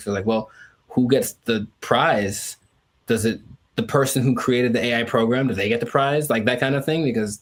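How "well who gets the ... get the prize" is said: normal talking voice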